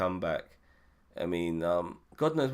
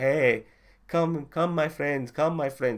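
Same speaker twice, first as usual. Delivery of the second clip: friendly, warm, raised voice, high-pitched and loud; 8 semitones higher, 5 dB louder than usual. Contrasting two characters, imitating T'Challa as the nice guy: T'Challa impression, nice guy. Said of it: "someone like T'Challa will be like".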